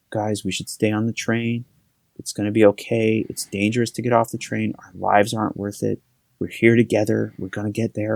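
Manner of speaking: very soothing, gentle, reassuring tone. Retelling what a woman on a stopped train told everyone: imitating a very soothing voice. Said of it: "very soothing voice was like".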